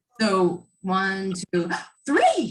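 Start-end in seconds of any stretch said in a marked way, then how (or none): 2.1-2.5 astonished, very high-pitched burst. Counting numbers plainly, then the third one: surprised on three. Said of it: "the third number I'll sound surprised".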